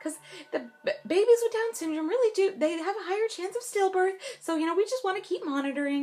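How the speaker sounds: mock bright, breezy, chipper, very high voice. Retelling what a man told her while she was pregnant, imitating a chipper tone. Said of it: "he says it in such a chipper way".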